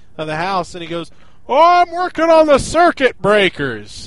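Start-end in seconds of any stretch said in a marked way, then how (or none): 1.5-4.1 very loud, high, swooping yell. Retelling what Dad yelled from the back rooms of the house, retelling Dad yelling. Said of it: "Dad yells at me from the back rooms".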